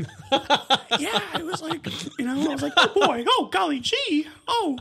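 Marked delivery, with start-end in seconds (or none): 2.8-4.8 loud, swooping, gee-whiz put-on cartoon mouse voice. Recounting the impression she later asked you about: Mickey Mouse impression. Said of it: "did you do a Mickey Mouse impression?".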